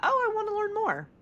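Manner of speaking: very high, intrigued, keen, eager curious tone. Asking whether they feel curiosity about someone: curious and interested. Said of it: "Do you feel curiosity?".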